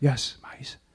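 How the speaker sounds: hushed, secretive, half-whispered delivery. Retelling a phone call about having mice, doing the half-whisper. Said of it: "Why are you whispering?".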